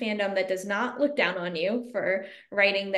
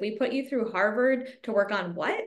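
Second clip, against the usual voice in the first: put-on horrified voice. Retelling how parents reacted to a horror remake job: imitating horrified parents. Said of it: "my parents were horrified".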